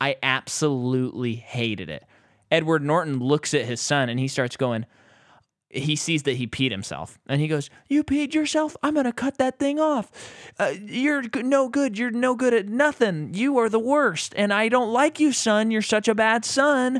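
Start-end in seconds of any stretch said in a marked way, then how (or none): 7.9-17.0 put-on cruel, berating scolding voice, pitched higher. Retelling a film scene where a father scolds his son who peed himself: imitating a father berating his son. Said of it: "replicating the grandma".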